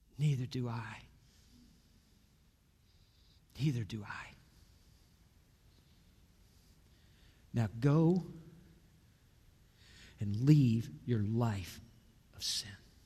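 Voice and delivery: dropped near-whisper. Retelling a scene, voicing the reply to the woman: imitating a dropped, near-whisper voice. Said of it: "maybe he dropped his voice a little bit, almost above a whisper".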